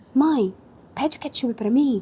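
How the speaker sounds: put-on shy, younger-sounding voice. Retelling asking mom to order for her, imitating shy younger self. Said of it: "Eu tinha vergonha de falar".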